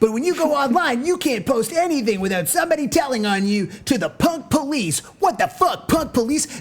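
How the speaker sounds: very high-pitched, rushed, rattled-off ranting. Speaker imitates a man who complained to the crowd instead of playing music: mimicking a fast high-pitched rant. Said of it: "he's talking so fucking fast, so high".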